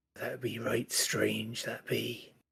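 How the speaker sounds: quiet mumbled muttering, said aside. Voicing a character watching a sword drain something's energy: muttering quietly to himself. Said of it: "mutters to himself".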